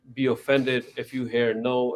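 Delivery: ordinary talk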